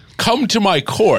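very high, pitched-way-up regal king voice. Speaker gives a quick taste of a king character, in a royal king voice. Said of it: "like a royal king".

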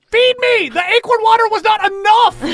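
very high, shrill, screeching scream. Voicing Pat's flip cup in the game, Flip cup screaming. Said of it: "Flip cup screams".

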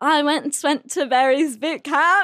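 really bad, fake, put-on British accent. Asked for a sample, the speaker shows off a really bad British accent. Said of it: "I actually do have a really bad British accent".

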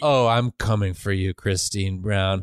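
put-on demon voice, laughing menacingly. Retelling a film scene, voicing the demon Lamia: laughing while menacing. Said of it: "Lamia starts laughing and is like".

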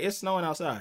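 normal talking voice

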